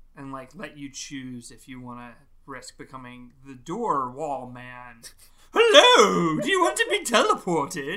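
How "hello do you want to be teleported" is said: bad, goofy, very loud, swooping silly voice. Suggesting a game to others, doing one of its characters: bad silly character impression. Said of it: "That's a real bad impression".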